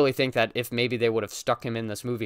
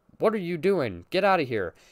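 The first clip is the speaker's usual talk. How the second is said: put-on flat, emotionless deadpan, pitched higher; 6 semitones higher than usual. Retelling a mother's line from a movie: imitating a flat emotionless delivery. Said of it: "with, like, no emotion whatsoever".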